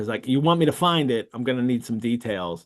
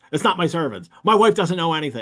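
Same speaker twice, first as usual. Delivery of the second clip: mock defensive male tone, higher; 4 semitones higher than usual. Retelling a man grilled by Holmes over the theft, imitating a defensive man. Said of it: "he's really defensive about it".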